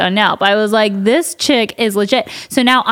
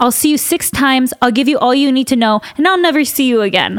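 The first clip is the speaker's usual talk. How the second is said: acted German-accented voice; 3 semitones higher than usual. Talking about therapy, speaker quotes a woman in her German accent. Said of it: "in her German accent".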